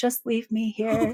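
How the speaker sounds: small, faint, far-off little voice. Retelling how a missing woman called from off the trail, imitating her little voice. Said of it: "they hear her like little voice".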